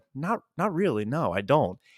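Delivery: mock muttering under breath. Retelling a reply to an offer to tell a story: imitating muttering under breath. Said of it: "under my breath, but loud enough for everybody to hear".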